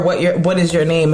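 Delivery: ordinary talk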